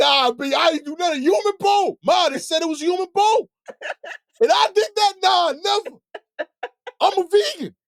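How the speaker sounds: shrill, loud yell pitched very high. Acting out an accused woman yelling her denial: imitating someone yelling. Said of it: "Yelling like".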